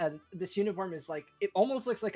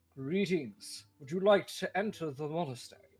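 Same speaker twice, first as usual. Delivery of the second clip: lowered, deep-voiced delivery. A guard greets visitors approaching the monastery, in a deeper guard voice. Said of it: "one of them kind of says in a deeper voice".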